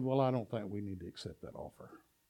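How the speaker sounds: playful joking delivery. Telling how he answered the men's question about the offer, retelling a joking remark.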